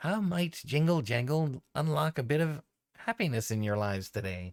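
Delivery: squeaky goblin character voice. Voicing a key-covered goblin greeting the players with a faint smile. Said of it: "she maintains a faint smile and says".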